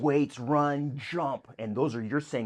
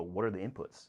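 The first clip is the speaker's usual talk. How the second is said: ordinary delivery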